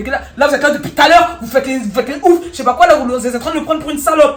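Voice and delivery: loud, high-pitched furious yelling.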